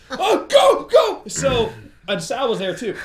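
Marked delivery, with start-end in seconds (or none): 0.1-1.2 play-acted shrill, very high, very loud terrified scream. Retelling a car chase when someone held up a rod: imitating Martin screaming in fear. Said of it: "And he screams".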